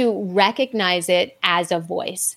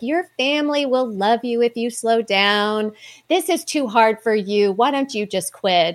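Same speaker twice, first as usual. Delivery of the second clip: sweet, coaxing, kind, protective grandma voice; 2 semitones higher than usual. Voicing the imagined grandma who speaks up before every race: Nancy's sweet protective voice. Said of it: "in a very sweet and nice protective voice".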